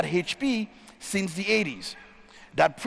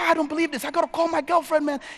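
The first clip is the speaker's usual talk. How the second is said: mock, high, tearful voice breaking down crying; 8 semitones higher than usual. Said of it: "And Alex breaks down crying".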